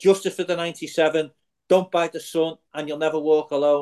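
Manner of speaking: normal talking voice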